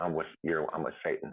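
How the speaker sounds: plain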